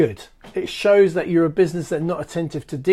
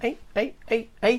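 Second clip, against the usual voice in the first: put-on Liverpool accent, higher, quieter; 6 semitones higher, 5 dB quieter than usual. Speaker breaks off while giving business tips, in a put-on liverpool accent. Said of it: "Why am I putting a Liverpool accent on?".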